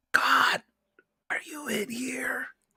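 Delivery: very high, lone calling voice. In a tabletop game, a player's character calls out in a hallway: very quiet. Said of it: "I'm just gonna say very quietly".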